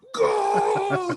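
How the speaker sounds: very high Spanish soccer commentator goal call. Retelling the announcer's call of a dunk: imitating a spanish soccer announcer. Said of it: "like a Spanish soccer announcer".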